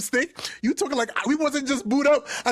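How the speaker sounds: normal talking voice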